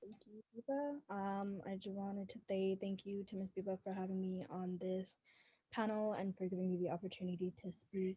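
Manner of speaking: very soft, barely audible voice. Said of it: "Can you speak louder".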